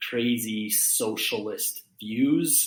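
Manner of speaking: lightly sarcastic tone with a touch of dryness. Talking about a candidate with other speakers, sarcastic tone. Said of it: "a little bit of sarcasm in, in my tone there".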